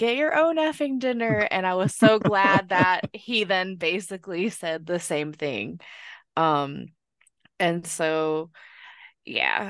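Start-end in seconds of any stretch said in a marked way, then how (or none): 0.0-1.4 put-on rapid, high-pitched shouted outburst. Recounting what they yelled at the TV during a show, retelling a shout at the TV. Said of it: "I literally shouted at my TV".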